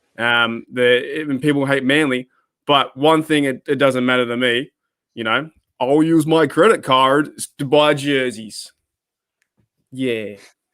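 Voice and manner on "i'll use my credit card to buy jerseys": clumsy, bad put-on American accent. Joking about buying jerseys with a credit card: bad american accent. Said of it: "that's the sort of American accent".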